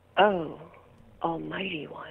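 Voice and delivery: put-on low, sultry, seductive sexy voice. Giving the line a whirl as instructed, in a sexy voice. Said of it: "in a sexy voice".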